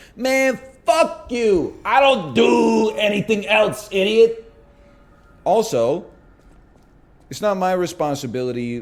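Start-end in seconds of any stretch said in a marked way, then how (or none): 0.2-4.5 mock full-on, high-pitched yelling. Answering a chat comment about talking about the kid: yelling. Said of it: "which is why I'm, like, yelling".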